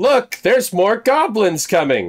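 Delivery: very high, very loud, swooping yelled shout. In a tabletop game, a player's character creates a diversion with a loud shout. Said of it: "in a very loud voice".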